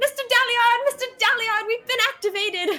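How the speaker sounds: mock shouting in an eccentric shopkeeper-style voice. Retelling a comedy sketch line: imitating an eccentric shop owner shouting. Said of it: "eccentric shop owner who keeps shouting to the back".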